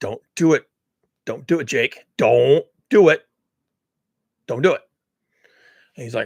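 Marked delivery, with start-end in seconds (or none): 0.0-4.8 put-on whispering. Imitating a lawyer behind a scientist, urging him in his ear: imitating a lawyer whispering. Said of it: "the lawyer standing behind him and whispering in his ear".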